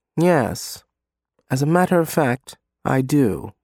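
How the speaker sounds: plain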